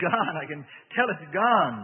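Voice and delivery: happy, glad, joyful, slow. After the spirit leaves, the narrator says it, joyful. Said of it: "I said joyfully".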